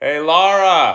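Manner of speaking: piercing, shrill, high yell at full volume. Calling out to Laura after warning everyone to close their ears: yelling. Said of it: "I'm gonna yell, guys".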